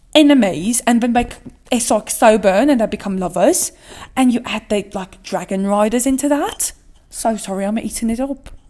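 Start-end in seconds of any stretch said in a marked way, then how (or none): 7.1-8.5 put-on British accent, quieter. Speaker gushing about enemies-to-lovers with dragon riders, in a British accent. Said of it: "with the British accent".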